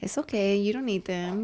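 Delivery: ordinary delivery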